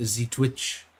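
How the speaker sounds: over-the-top, bad, exaggerated fake French accent. Playfully mispronouncing a name, in a bad french accent. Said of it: "doing a bad French accent".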